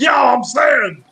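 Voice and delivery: slow, drawn-out mock yell. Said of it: "as soon as you go".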